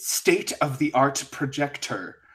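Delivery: fake British accent, every T hit hard. Describing how he spoke, imitating him: fake British, over-enunciated T's. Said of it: "fake British... over enunciated every single T".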